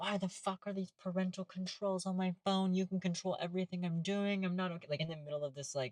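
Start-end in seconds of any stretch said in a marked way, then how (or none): 0.0-4.9 acted-out, high-pitched screaming rant. Retelling a teenager screaming at her dad on the phone: imitating a girl screaming. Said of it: "screaming, like".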